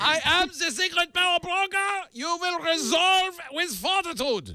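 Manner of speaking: put-on German accent, high and slow. Acting out the article's title as its subject would say it: mock German accent. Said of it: "and not with a German accent".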